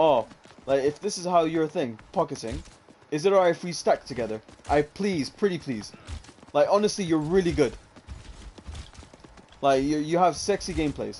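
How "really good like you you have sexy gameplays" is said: ordinary talk, nothing marked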